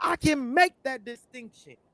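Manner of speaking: heated, riled-up, agitated, insistent tone. Arguing back against another speaker's point: worked up, told to calm down. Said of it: "You gotta calm down".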